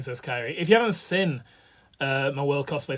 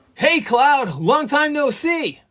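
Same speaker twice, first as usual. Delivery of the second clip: very high, loud, big cartoon-style voice; 11 semitones higher, 8 dB louder than usual. Speaker demonstrating the voice used for Zack, in overemphasized American cartoon style. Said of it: "overemphasized general like American cartoon voice".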